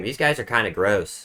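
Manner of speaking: ordinary delivery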